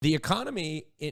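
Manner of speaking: normal talking voice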